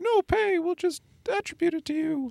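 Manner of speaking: high, soft mock newscaster voice. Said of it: "And they'd be like".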